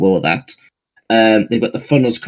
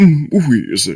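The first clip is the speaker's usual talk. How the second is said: put-on posh British creature voice, higher; 5 semitones higher than usual. Showing how the British version would say its name: obnoxiously British Wheezing voice. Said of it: "the British one would have just like".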